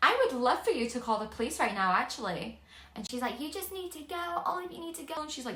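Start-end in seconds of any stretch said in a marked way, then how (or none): 3.4-5.2 pitched-up, hostile, screamed delivery. Retelling a confrontation where the mother screamed at them: imitating a woman screaming. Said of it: "screaming at us".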